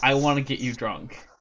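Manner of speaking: imitated predatory tone. Retelling a coworker's remark: imitating a predatory tone. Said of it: "the way she said it sounded so predatory".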